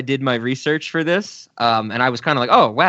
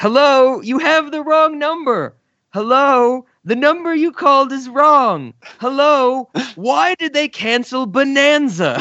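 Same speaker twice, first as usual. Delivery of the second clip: put-on very high, drawn-out old-man whine; 11 semitones higher than usual. Quoting the last line of a sketch, whiny Mr. Oldman voice. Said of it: "doing his whiny old man voice".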